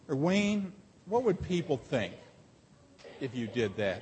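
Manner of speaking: needling, hushed stage half-whisper. Acting out the devil talking someone out of faith: imitating the devil half-whispering. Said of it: "there is the devil whispering".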